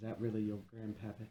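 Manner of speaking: soft, secretive half-whisper. With an arm around a granddaughter after reassuring her grandfather, half-whispering. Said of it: "And I kind of whisper".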